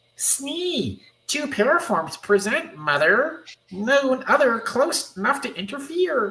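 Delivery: very high, puppet-creature character voice. Voicing an outrageous-looking new character, in a Muppet-like voice. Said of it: "It's like a Muppet".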